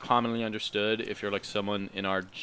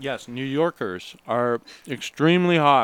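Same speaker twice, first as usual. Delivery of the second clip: loud talk while chewing, mouth full; 4 semitones higher, 8 dB louder than usual. Talking while eating Thai food at 10:30, mouth full. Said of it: "Sorry, I'm eating".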